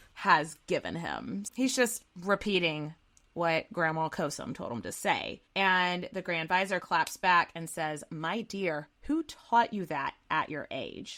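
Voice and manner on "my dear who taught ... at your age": mock condescending, patronizing tone. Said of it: "but it's just very condescending".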